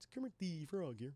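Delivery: badly done, terrible puppet-style frog voice. Checking chat for last-minute questions, doing a bad Kermit impression. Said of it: "That was a terrible Kermit impression".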